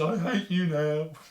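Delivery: slow, utterly beaten, deflated put-on delivery. Retelling a man's line from a video, imitating a defeated voice. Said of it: "in the most defeated voice says".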